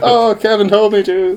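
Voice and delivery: very high, drawn-out, flustered tone. Retelling how the prank's target reacts: imitating a flustered person. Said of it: "they get flustered".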